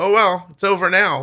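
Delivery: mimicked offhand tone. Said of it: "she actually said it to me in that tone".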